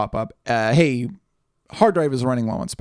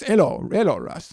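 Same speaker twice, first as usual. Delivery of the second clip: imitated older man's Dutch accent, higher pitch; 5 semitones higher than usual. Speaker imitates an older Dutch man greeting him, in a Dutch accent. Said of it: "He's Dutch. and so he talks like this".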